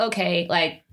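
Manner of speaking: normal talking voice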